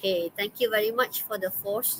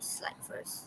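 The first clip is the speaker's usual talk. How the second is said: soft, whispered muttering under breath. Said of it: "muttered to self at the slides".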